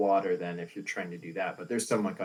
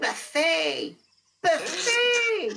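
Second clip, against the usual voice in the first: tiny, very high, loud squeaky voice; 5 dB louder than usual. Narrating a game, voicing what Rust hears before a persuasion check: tiny squeaky voice. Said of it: "tiny little squeaky voice".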